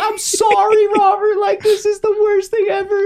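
mock very high, tearful, crying voice. Retelling a mother apologizing after a bad haircut: imitating mom crying. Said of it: "My mom was crying".

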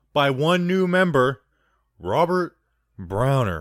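on-air radio DJ announcer voice. Podcast host reads out a new Patreon member's name, radio voice. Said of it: "Bunch of different radio voices you're doing today".

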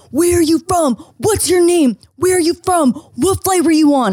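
put-on high-pitched, aggressive screaming. Retelling how people screamed questions at others, imitating someone screaming. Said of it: "they would go up to them and scream like".

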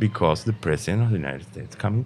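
ordinary talk

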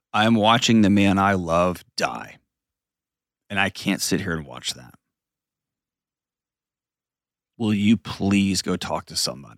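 very quiet, steady, calm delivery. Retelling a direct quote from a wife: imitating a quiet, calm manner. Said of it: "in a very quiet, calm manner".

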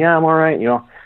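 light called-out voice. Recounting a walk through the trees, imitating the other man yelling back. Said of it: "He's yelling back to me".

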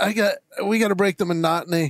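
normal talking voice

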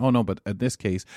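ordinary talk, nothing marked

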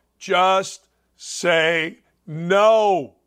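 very slow, deliberate, word by word, drawn-out "no". Telling someone to look at him and repeat after him, said slowly. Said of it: "I'm going to say it slow".

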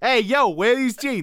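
put-on Brooklyn accent. Continuing the jeans pitch bit: brooklyn girl voice. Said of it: "That sounds like a Brooklyn girl".

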